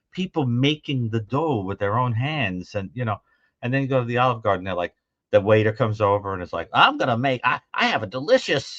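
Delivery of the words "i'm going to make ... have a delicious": put-on American accent, higher. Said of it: "say the Italian food with an American accent".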